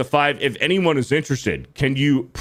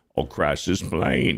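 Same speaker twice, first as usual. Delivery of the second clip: masked-sounding villain voice, much lower; 9 semitones lower, 4 dB quieter than usual. Reacting to a 199 donation message, in Bane voice. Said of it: "in Bane voice".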